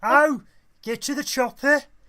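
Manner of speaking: Birmingham accent, pitched very high. Describing a bit doing Arnold Schwarzenegger films, Schwarzenegger in a Birmingham accent. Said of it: "films and a Birmingham accent".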